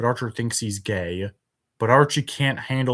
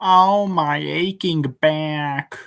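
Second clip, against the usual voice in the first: very slow, high, drawn-out put-on voice; 5 semitones higher, 3 dB louder than usual. Reviewing an episode and attempting a Squidward impression. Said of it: "trying to do a Squidward impression".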